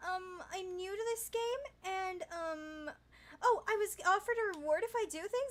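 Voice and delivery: high, fake, put-on feminine voice-chat voice. Showing how to use voice chat to get help: imitating a feminine voice. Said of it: "or at least have a feminine voice".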